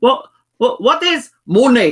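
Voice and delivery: put-on older man's Spanish-accented English. Retelling a beer with an old Spanish man met in Ibiza, imitating Tito's Spanish accent. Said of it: "an old Spanish fella that I met".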